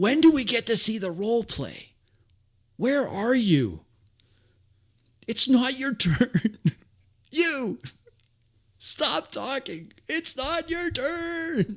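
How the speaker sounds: very high, drawn-out heckling scream. Imagining heckling a twerking dungeon master from the audience, acting out a scream. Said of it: "I'd be screaming out".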